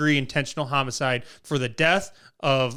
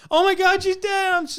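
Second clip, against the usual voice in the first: put-on crying wail, much higher pitch; 4 dB louder than usual. Telling how a woman faked grief on a phone call, imitating a fake crying wail. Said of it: "where they cry".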